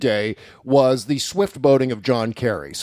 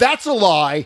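high, mock screaming outburst; 7 semitones higher than usual. Retelling how Lawrence O'Donnell kept cutting off Jerome Corsi: imitating Lawrence O'Donnell screaming. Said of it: "he would go".

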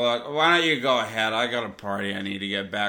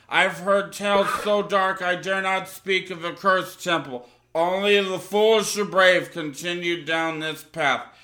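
ominous, threatening, menacing, pitched-up delivery; 8 semitones higher, 3 dB louder than usual. Reading a game card's line for an arriving adventure crew, in a menacing tone. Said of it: "speaking in menacing tone".

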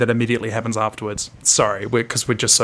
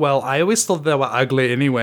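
normal talking voice

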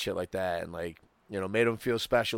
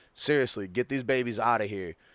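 mock pleading, begging tone; 3 semitones higher than usual. Retelling how Ralphie asked a man to take the kids out: imitating Ralphie pleading. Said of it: "basically pleading with him".

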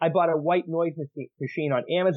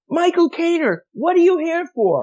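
very high, shrill, loud yell; 7 dB louder than usual. Retelling a story about a receptionist across the waiting room: imitating someone yelling. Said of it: "and she yells".

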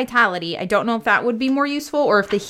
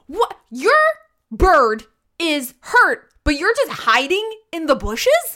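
livid, furious, high-pitched, muddled outburst; 8 semitones higher than usual. A player voices her character, who is livid and questioning someone: livid. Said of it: "She's livid. She's so mad".

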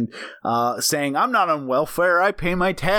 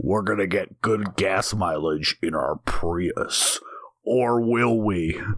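80s horror movie trailer narrator voice, lower; 7 semitones lower than usual. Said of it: "horror movie trailer voice from the eighties".

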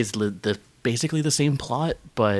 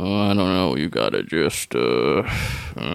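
very low, slow, half-asleep mumble; 8 semitones lower than usual. Describing an actor recording in the booth, in a sleepy Sam Elliott mumble. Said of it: "literally asleep where he's just like".

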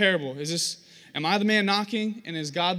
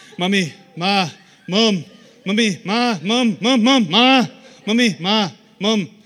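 very loud, slow, persistent nonstop calling; 10 dB louder than usual. Retelling a cartoon baby nagging his mother by her bedside: imitating Stewie from Family Guy. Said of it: "goes into his mother's room right by her bedside and goes".

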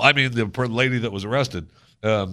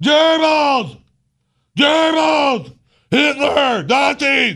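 high, loud yelling. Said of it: "standing in an audience in Central Park yelling".

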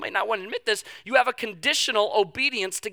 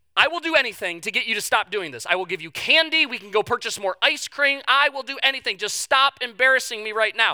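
ordinary talk, nothing marked

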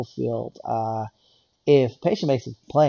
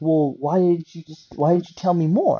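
put-on mock anger, pitched higher; 4 semitones higher than usual. Retelling a caller who phoned back after hanging up, imitating an angry caller. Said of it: "He calls back all angry".

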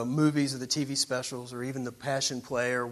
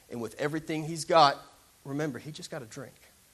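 plain

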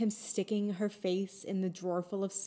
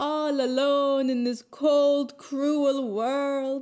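play-acted drunk slur, words running together, high and loud; 6 semitones higher, 6 dB louder than usual. Describing a favorite film scene, the speaker quotes a character, imitating slurred words. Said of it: "He's like slurring his words".

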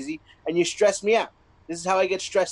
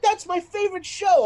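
put-on very high, wailing child's tantrum; 13 semitones higher, 3 dB louder than usual. Retelling a five-year-old's meltdown over a confiscated iPad: imitating a child's meltdown. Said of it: "she had a meltdown".

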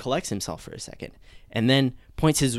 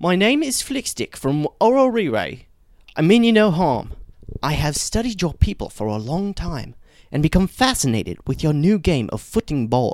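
fun put-on British accent, higher and louder; 5 semitones higher, 6 dB louder than usual. Telling a comic story, voicing a small alien creature: fun British accent. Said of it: "says in a fun British accent".

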